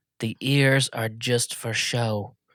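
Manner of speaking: very slow, hushed, secretive half-whisper. Leaning over to another character at the table: half-whispering. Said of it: "I lean over to Winnie and I whisper".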